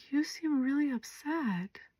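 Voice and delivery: gentle, very quiet, very soft tone. Showing how one might answer a fuming kid: gentle voice. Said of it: "in your gentle".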